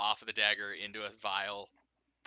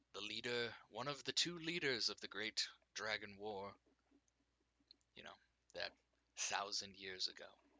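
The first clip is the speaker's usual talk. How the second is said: unnatural otherworldly echoing voice; 10 dB quieter than usual. A game master voicing a golden-masked being to the players: unnatural echoing voice. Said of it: "is has is wearing a golden mask, has Mhm. no body expressions, and his voice is not natural. It's not a normal voice. It's a fucking echo from the very air itself into you. / is has is wearing a golde".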